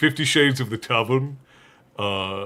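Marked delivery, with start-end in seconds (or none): none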